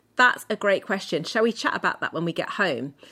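ordinary talk

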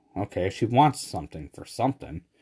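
ordinary talk

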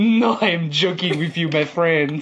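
mock chuckling, laughing through the words. Retelling how the officer revealed his joke: imitating someone laughing while talking. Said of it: "He starts laughing like".

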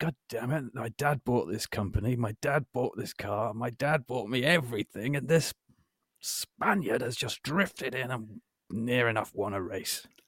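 slightly wheezy cartoon dog put-on. Imitating a racing driver's private thoughts during an interview: slightly wheezy Muttley voice. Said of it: "That sort of slightly wheezy Muttley".

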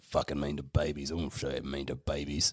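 very quiet, very low, hushed mutter under breath. Speaking in character as a private remark, muttering under breath. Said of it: "I actually say that under my breath".

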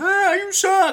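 mock little boy's shout, shrill and very high. Voicing a heckling little elven boy in a crowd: elven boy yelling.

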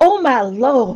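put-on swooning, fainting Southern belle voice. Describing a teacher who passed out in a chair: mock Southern-belle swoon. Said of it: "Is she a Southern Belle now?".

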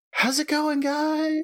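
very high, spectral, ghostly voice. Narrating to the group a ghostly voice calling from the drawing room: ghostly voice. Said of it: "a ghostly voice from within go".

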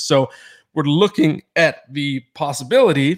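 voice cracking and breaking mid-phrase. A podcast host discussing trade rumors, voice cracking. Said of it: "as my voice just cracked there".

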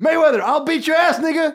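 mock very high, loud heckling shout. Retelling how a guy filming yells at Mayweather, retelling a yell. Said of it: "så skriker han".

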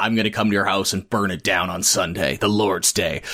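mock deep voice. Imitating a man who puts on a deep voice he doesn't have. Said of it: "he's got this deep voice".

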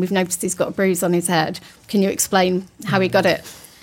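normal talking voice

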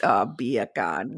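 put-on Jamaican accent. Demonstrating a podcast trick for doing an accent, in a Jamaican accent. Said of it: "that's how you can do a Jamaican accent".

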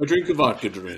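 dopey, dim-witted put-on voice. Doing an impression of another speaker: Benner impression. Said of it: "Whenever [name] does an impression of me".

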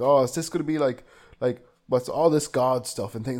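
ordinary talk, nothing marked

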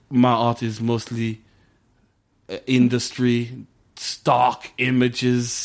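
very slow, drawn-out, put-on German accent. Mocking an artist at a party: Saturday Night Live German accent. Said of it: "sounded like Saturday Night Live character of German people".

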